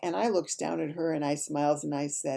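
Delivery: ordinary delivery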